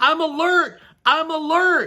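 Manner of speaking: exasperated repeated shouting. Retelling a car that kept beeping, re-enacting yelling at the car. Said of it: "I'm yelling at the car".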